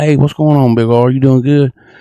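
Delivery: put-on mellowed-out tone. Retelling a story, speaker quotes a guy greeting him, imitating a mellow greeting. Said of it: "he kind of just z- mellows out".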